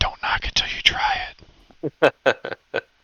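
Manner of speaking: loud, acted stage whisper. Speaking in character to the group, whispering in character. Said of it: "I'll kinda whisper".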